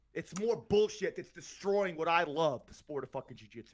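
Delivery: angry, heated, fired-up, worked-up ranting delivery. Speaker vents about what's destroying the sport he loves, heated rant. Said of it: "I got a little heated up".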